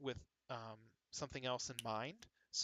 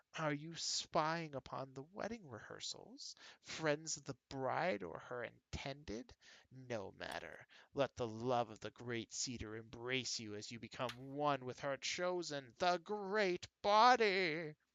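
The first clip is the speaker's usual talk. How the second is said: spluttering, gurgling, spitting monster voice. A larval myconid creature addresses the travelers at the wedding rehearsals, gurgling, spitting creature voice. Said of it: "The myconid's voice gurgles and spits".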